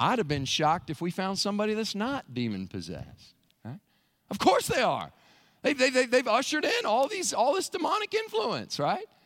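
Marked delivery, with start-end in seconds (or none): none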